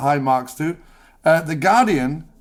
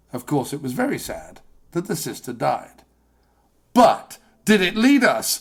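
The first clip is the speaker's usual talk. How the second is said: put-on dramatic news narrator voice, slower. Imitating a paid talking head on a show, 20/20 talking-head cadence. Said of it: "Everyone on twenty twenty talks like this".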